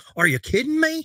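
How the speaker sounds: very high, deliberately bad, incredulous cry. Doing a terrible Skip Bayless impression about a rookie's shooting. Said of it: "That was a terrible Skip Bayless impression".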